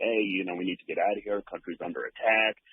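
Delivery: plain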